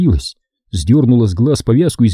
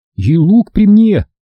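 very high, slow, forced calm barely masking fear; 9 semitones higher, 4 dB louder than usual. A boy who fell into a hole adds to a girl's comforting words, trying not to sound scared. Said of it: "надеясь, что голос его звучит не слишком испуганно".

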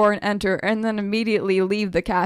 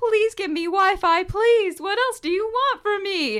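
desperate, high-pitched scream; 11 semitones higher than usual. Recounting a moment by a sad coffee shop, mock-screaming into the sky. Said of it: "start to scream into the sky".

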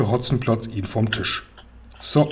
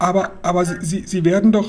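halting, high, slow stammer; 5 semitones higher than usual. Narrator reads one character's reply to another's order, stuttering. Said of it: "stotterte Seppel".

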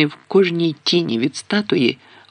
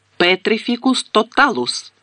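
high, cried-out exclamation; 7 semitones higher than usual. Hermione, pointing her wand at Neville, casts a spell, exclaimed. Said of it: "вигукнула".

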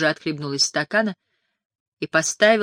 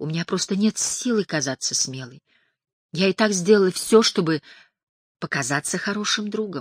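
plain

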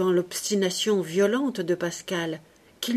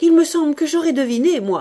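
crying out, very loud and high; 8 semitones higher, 8 dB louder than usual. A narrator reads a character answering another's protest, crying out. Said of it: "cria encore Martine".

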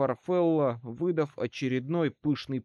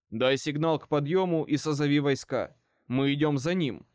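plain reading voice

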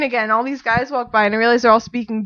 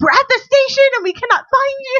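put-on panicked freaking out, higher and louder; 14 semitones higher, 4 dB louder than usual. Retelling a friend's call from the station: imitating someone freaking out. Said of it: "just freaking out".

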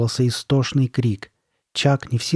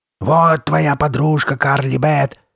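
loud, creepy, growled voice; 3 semitones higher, 5 dB louder than usual. A girl answers Steve's uneasy question, growling. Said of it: "прорычала она".

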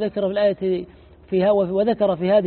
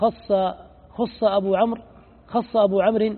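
normal talking voice

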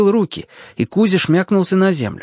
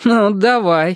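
slightly scoffing, mocking, teasing tone; 4 semitones higher than usual. Alyoshka answers a girl who offered to help him: slightly mocking. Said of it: "сказал слегка насмешливо".

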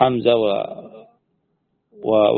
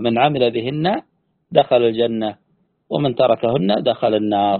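ordinary talk

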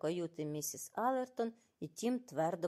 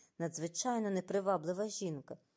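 ordinary delivery, nothing marked

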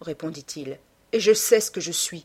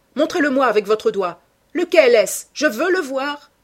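raised, urgent, insistent cry; 6 semitones higher, 6 dB louder than usual. Jim Vane, gripping her roughly by the arm, speaks to her; exclaiming. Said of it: "s'écria-t-il".

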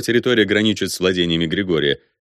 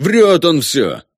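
frantic, desperate, high-pitched wailing yell; 7 semitones higher, 5 dB louder than usual. Narrator reads Dmitro answering an accusation before the ataman, desperate yelling. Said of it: "отчаянно вопит Дмитро".

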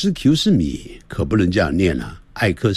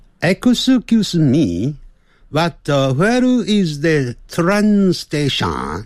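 slight Japanese accent, pitched up; 9 semitones higher than usual. Testing a voice setting with a sample English sentence, slightly Japanese-sounding accent. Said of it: "刚才念的有点像日本人的声音这样子".

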